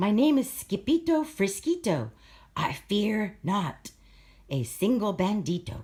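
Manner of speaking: mild, gentle storybook voice. Narrator reads the swordfighter's reply as the bandito flies at him, very soft voice. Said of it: "in a muy, muy soft voice".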